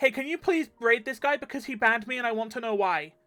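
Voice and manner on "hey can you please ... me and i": earnest, high, pleading voice. Retelling a chat viewer's plea for a raid: imitating someone begging.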